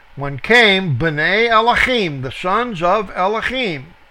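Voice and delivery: plain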